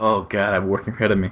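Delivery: mock despairing tone. Retelling how the other speaker answered about work: imitating despair. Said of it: "it was like despair".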